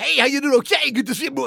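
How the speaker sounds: booming radio DJ voice, very loud, very high. Showing the AM side of his two-stool stage act, AM radio host voice. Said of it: "You know, that voice".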